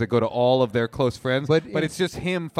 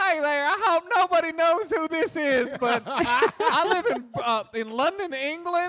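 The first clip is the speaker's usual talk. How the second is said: imitated Southern accent, higher. Imitating a podcast caller with a very specific accent: put-on Southern accent. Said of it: "very specific accents".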